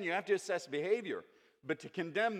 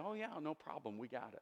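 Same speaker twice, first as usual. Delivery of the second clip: put-on naive carefree tone, much quieter; 2 semitones lower, 11 dB quieter than usual. Retelling how people answered a man's warning, imitating a naive reply. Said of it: "they sort of very naively say".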